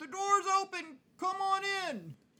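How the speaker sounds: very high voice calling out. Game master voices someone inside a house answering cries for help: calling out from inside. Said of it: "a voice from inside the house calls out".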